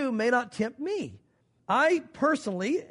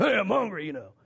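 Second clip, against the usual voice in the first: put-on grunting voice, lower pitched; 4 semitones lower than usual. Speaker retelling Esau coming in from hunting, grunting Esau voice. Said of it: "he comes in grunting".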